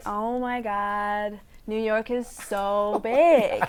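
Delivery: put-on Los Angeles valley girl accent. Showing off accents on request, a speaker does an la babe accent. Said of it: "I'm good at that L A babes accent".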